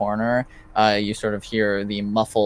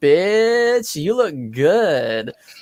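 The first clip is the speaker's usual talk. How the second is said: put-on slightly drunk, high yell, bitch drawn out; 7 semitones higher, 4 dB louder than usual. Describing a girl calling out from a distance, imitating a tipsy girl yelling. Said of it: "slightly tipsy girl just yell out".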